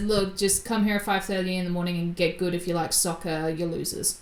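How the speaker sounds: normal talking voice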